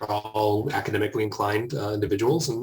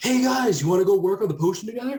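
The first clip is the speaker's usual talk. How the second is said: very high yell carrying across the room; 11 semitones higher, 4 dB louder than usual. In a game, a player's character yells out to the others across the open: yelling. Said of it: "Can I yell to them".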